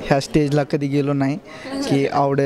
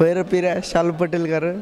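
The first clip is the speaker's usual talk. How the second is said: ordinary delivery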